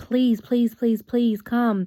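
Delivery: acted tearful, crying voice. Retelling a dream of begging someone to escape: imitating tearful begging. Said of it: "we were begging and pleading with this person".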